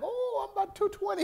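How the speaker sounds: high-pitched, joking, boastful delivery. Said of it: "I'm like".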